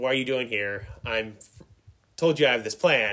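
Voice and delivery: ordinary talk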